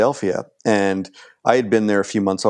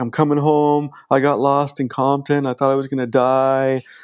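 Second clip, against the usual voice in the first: mock tearful voice, higher; 5 semitones higher than usual. Retelling an overheard phone call to a mother: imitating someone crying. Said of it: "he's crying into the phone to his mother".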